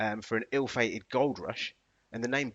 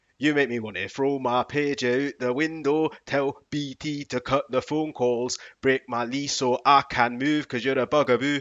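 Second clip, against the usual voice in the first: put-on Scottish male accent, much louder; 2 semitones higher, 6 dB louder than usual. Trying out how the lines would sound in a scottish man's accent. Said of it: "how would that sound like in a Scottish man's accent".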